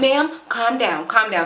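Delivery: ordinary delivery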